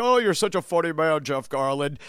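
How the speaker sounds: put-on fawning, admiring tone. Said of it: "He's like".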